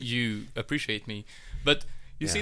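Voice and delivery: ordinary talk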